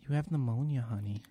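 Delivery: very soft, hushed, tender, gentle voice. Retelling the doctor at urgent care coming in after the tests, in her softest voice. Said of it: "with the softest of voice".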